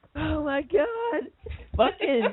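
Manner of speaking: very high, words breaking into laughter. Starting a segment after a clip plays, laughing while talking. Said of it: "Are you laughing?".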